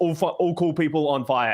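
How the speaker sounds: normal talking voice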